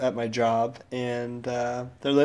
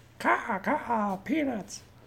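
crow cawing voice, much higher, quieter, slower; 10 semitones higher, 5 dB quieter than usual. A speaker imagines being a bird, cawing crow impression. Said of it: "That's my impersonation of a crow".

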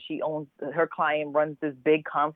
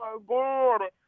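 high-pitched, shrieking scream; 8 semitones higher than usual. Retelling her reaction to a call from Angela Bassett, retelling a scream. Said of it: "I threw my phone screaming like".

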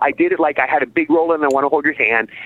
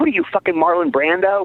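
joking, teasing, kidding-around tone; 4 semitones higher than usual. Retelling a co-star's remark about using cue cards: imitating a joking jab. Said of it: "saying it in a joking way".

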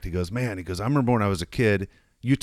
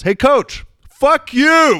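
very loud, shrill, high-pitched yell; 9 dB louder than usual. Retelling how a buddy yelled at a coach berating a kid: retelling a friend's yell. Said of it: "my buddy Brock just yells".

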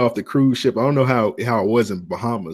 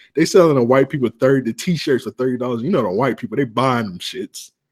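ordinary talk, nothing marked

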